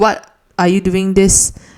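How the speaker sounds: ordinary delivery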